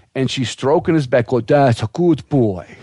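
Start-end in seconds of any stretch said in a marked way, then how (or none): 1.4-2.6 put-on slow female Russian accent. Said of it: "Get the accent down".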